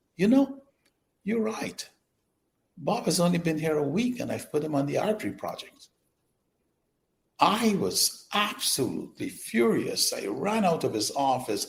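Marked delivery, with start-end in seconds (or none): 0.2-5.9 quick, considered, reflective, thoughtful tone. Quoting a man's reply in his office, imitating a thoughtful tone. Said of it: "in a very thoughtful tone".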